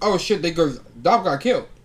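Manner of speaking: ordinary delivery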